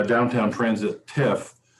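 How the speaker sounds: usual speaking voice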